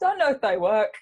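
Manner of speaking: put-on English accent. Quoting a woman from England in her accent. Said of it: "I'm just saying this with her accent".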